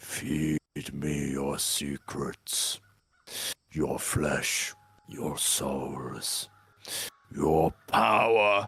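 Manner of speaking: very low, slow, drawn-out, guttural demon growl. Voicing a demon that erupts from the scarecrow: guttural demon voice. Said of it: "A guttural voice throws out".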